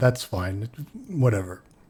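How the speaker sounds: uninterested, disinterested tone. Voicing a guard who is asked to fetch a captain: uninterested. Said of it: "he doesn't seem that interested in doing this either".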